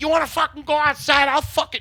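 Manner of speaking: put-on, furious, high, very loud bellowing. Retelling a bagel-shop fight, quoting the angry little guy: retelling an angry yell. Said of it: "he's just yelling at everybody".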